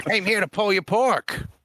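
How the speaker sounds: terrible fake Boston accent, very high-pitched. Joke about a meet and greet with someone in a wheelchair, in a terrible boston accent. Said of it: "Or whatever the Boston accent is".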